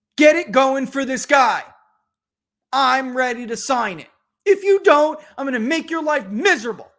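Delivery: play-acted shrill, high-pitched, loud yelling tirade. Retelling how the governor phones the board: imitating someone yelling. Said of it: "starts yelling at the board".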